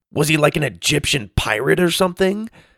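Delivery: loud high delivery. Reading a story, a boy asks a question too loudly: asking loudly. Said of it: "Sawyer asked loudly".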